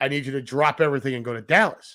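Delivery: plain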